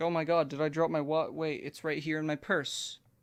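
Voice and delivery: put-on panicked voice. Retelling a scene where a character finds her wallet: imitating Evelyn panicking. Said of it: "And then Evelyn starts panicking".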